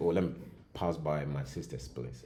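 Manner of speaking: usual speaking voice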